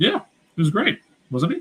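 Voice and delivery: very sarcastic, swooping sing-song, falsely admiring. Praising a former head coach the other speaker is said to love: sarcastic. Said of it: "are we being sarcastic?".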